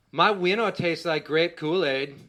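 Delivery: booming, very loud, proud and boastful. Retelling what the son announced at the pool: imitating a proud announcement. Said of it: "he proudly announced".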